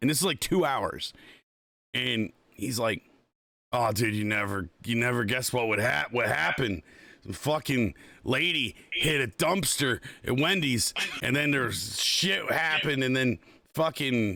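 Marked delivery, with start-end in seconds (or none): none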